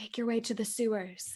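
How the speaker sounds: soft, hushed half-whisper under the breath. Voicing a character telling the freed prisoners where to go: half-whispering. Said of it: "whisper to them".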